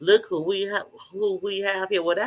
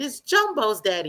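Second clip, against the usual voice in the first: put-on young small child's speaking voice; 3 semitones higher than usual. Retelling hearing oneself answer a question: imitating own kid's voice. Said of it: "I hear myself speaking in a kid's voice".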